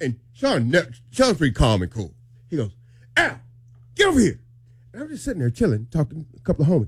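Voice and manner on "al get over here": mock yell, much higher. Retelling how someone called the speaker over, retelling a yell. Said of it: "he's yelling at me".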